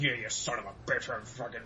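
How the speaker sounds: put-on cussing under breath. Retelling how a person started cussing under his breath while walking away: imitating cussing under breath. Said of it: "he starts cussing at me under his breath".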